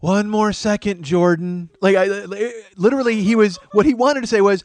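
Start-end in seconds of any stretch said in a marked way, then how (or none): 0.0-1.7 slow, resigned, defeated, given-up delivery. Retelling a father answering his kid from a bathroom stall: imitating a resigned voice. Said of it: "The resignation in his voice was so gorgeous".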